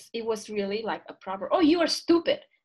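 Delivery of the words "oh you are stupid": put-on shrill, very high, full-volume scolding tone. Recalling how she called them stupid in grade seven, retelling a loud insult. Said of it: "not in a low volume voice".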